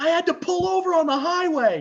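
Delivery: very high, shrill, loud, disbelieving screaming. Retelling a friend's phone reaction to a win: imitating Chris screaming. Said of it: "he's screaming at me".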